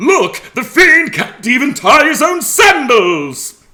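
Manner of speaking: loud booming voice, high pitch, slow pace. Imitating a game character's taunt: boisterous Theseus voice. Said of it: "He's got this real boisterous voice".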